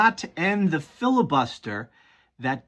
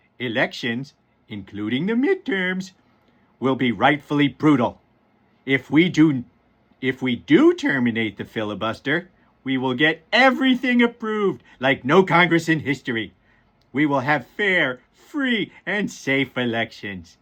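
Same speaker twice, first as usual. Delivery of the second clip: goofy cartoon-father voice, low; 4 semitones lower than usual. Reading a social media post aloud to the audience: Homer Simpson voice. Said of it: "in my best Homer Simpson voice".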